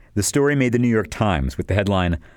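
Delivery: ordinary delivery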